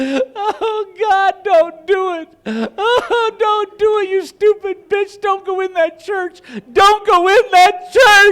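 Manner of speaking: mock, very high-pitched, slow, drawn-out, weepy, tearful pleading. Retelling the wife crying at the tv: imitating someone crying. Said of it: "She's crying. She's going".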